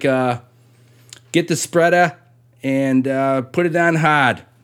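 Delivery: clumsy put-on Boston accent, slow. Attempting a Boston accent after warning it will be bad: bad put-on Boston accent. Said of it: "Should I try the Boston accent?".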